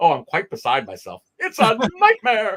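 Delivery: high, loud, fussy, swooping robot voice. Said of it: "C three P O is like".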